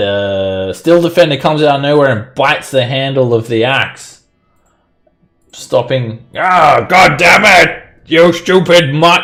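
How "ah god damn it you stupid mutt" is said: furious yell, high and loud. Voicing a fighter whose axe swing is blocked by a dog: angry yell in character. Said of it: "he yells".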